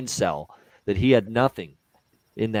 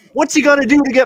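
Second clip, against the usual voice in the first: mock scream, higher and louder; 9 dB louder than usual. Retelling watching a hockey game, angry at a goalie: imitating own past screaming. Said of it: "I'm screaming when I'm watching this".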